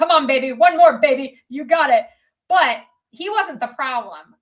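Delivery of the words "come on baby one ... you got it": put-on loud Italian-accented coach voice. Retelling what a personal trainer at a gym would say, imitating an Italian trainer. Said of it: "He was like an Italian guy".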